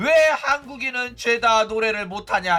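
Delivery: ordinary delivery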